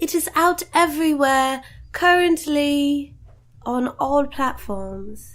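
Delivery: put-on British accent. Plugging a release while trying out a voice for a listener, put-on british accent. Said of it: "Is that good British accent?".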